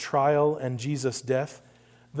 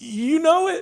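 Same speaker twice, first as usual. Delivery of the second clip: put-on very high, trembling, quivering voice; 13 semitones higher than usual. Recalling slipping in the cold, the speaker re-enacts answering the man calling to him: retelling a quivering voice. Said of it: "And me saying with a quivering voice".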